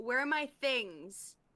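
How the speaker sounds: fast, high-pitched shouting. Unable to see the others outside, she shouts to the guys: shouting. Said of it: "She's gonna shout to the guys".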